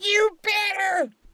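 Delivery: sharp, pointed, very high-pitched voice. Retelling the wife's reply to his apology: imitating Shirley's sharp voice. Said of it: "'Cause she talked like that".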